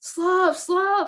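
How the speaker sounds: acted, very high-pitched, alarmed yell. Retelling yelling at him as the slough slid down toward him: retelling a yelled warning. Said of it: "like yelling at him".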